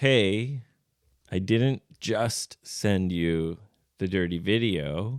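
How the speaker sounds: plain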